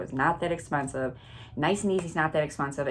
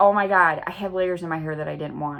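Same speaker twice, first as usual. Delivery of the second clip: imitated panicked freak-out, louder; 6 dB louder than usual. Retelling own reaction to unwanted layers in hair: imitating own past freak-out. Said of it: "So I'm freaking out at this point".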